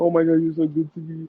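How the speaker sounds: put-on tearful voice. Retelling what a drunk woman said to him with tears in her eyes, imitating someone teary. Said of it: "still kind of like tears in her eyes".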